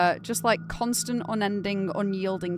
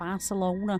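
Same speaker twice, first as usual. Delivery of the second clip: put-on Manchester accent, Barcelona said full Manchester way. Imitating a friend saying a word in a strong Manchester accent. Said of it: "really brings out his Mancunian accent".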